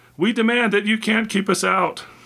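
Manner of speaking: very high-pitched bawling shout. Reading the younger intruder's line as he forces his way in, bawling. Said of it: "bawled the younger one".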